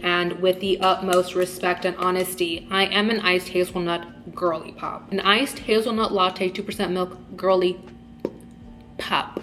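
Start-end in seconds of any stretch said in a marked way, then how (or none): none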